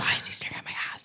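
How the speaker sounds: fast, hushed, unvoiced whisper.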